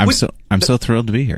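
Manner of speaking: insincere sarcastic tone, swooping sing-song. Answering the host's greeting on arrival, sounding sarcastic. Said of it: "that not sincere at all".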